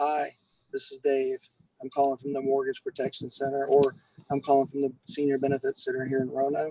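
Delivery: subdued, restrained, toned-down calling voice. A field underwriter showing how he opens a call to people, in a toned-down phone voice. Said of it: "I'm toning my voice down".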